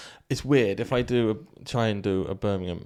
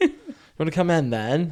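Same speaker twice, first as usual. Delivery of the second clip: terrible put-on Bristol accent, sing-song, slipping into Welsh; 6 semitones higher, 3 dB louder than usual. Speaker retries a local greeting after calling the first try terrible; bad Bristol accent turning Welsh. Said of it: "It's going Welsh".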